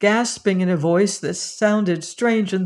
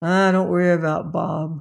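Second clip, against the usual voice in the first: muttering reassuringly. A narrator reads a man talking to a woman behind a locked door, muttering reassuringly. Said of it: "muttered Hayman reassuringly".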